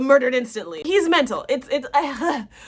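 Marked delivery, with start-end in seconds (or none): none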